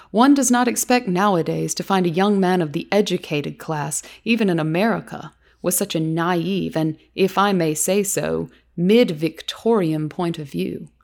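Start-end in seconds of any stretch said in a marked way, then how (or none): none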